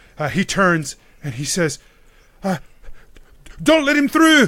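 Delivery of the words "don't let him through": terrified shout, very high-pitched and loud. Narrating a game, voicing Donald across from the player: Donald, shaking with fear. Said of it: "Donald is shaking with fear".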